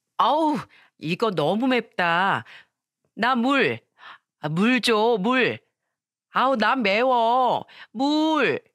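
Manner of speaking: put-on cutesy, high, slow childish baby talk. Telling how your mother-in-law acted cute during a meal, speak as her in a put-on baby voice. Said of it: "애기 같은 말투에 / 애 목소리를 내면서".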